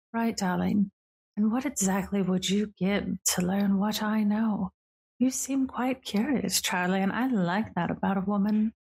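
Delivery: speaking right at the ear. A woman sidles up to charlie and leans in, speaking close into the ear. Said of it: "leans over in your ear".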